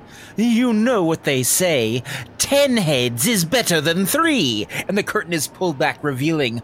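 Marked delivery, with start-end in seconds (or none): 0.4-4.7 sly, snickering voice. A narrator voicing the Rat King calling out from behind a velvet curtain: snickering Rat King voice. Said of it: "a voice from behind that curtain snickers".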